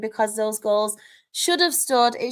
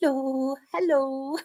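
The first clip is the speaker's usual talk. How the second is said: put-on sweet, cutesy voice; 2 semitones higher than usual. Saying how she acts around animals, the speaker shows her put-on voice for an animal. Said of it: "I put on a voice like".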